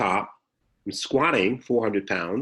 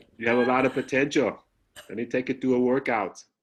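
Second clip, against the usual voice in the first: put-on Austrian accent, higher pitch; 3 semitones higher than usual. Repeating the line when asked again, Arnold Schwarzenegger accent. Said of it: "Say it again".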